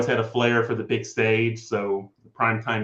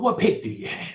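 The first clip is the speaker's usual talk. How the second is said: pitched-up primetime TV announcer voice; 8 semitones higher than usual. Doing the voice the others asked for: Deion Sanders voice. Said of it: "just whipping out a perfect primetime impression".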